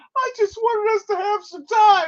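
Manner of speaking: mock, very high, weepy, tearful pleading voice. Retelling a scene where the girlfriend turns to tears: imitating a tearful plea. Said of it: "she puts the tears on him".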